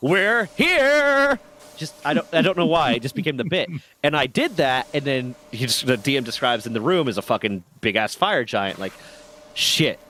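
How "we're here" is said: mock booming, very high voice, here drawn out. Player retells a running joke from a game session of opening doors, booming voice. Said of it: "booming voice".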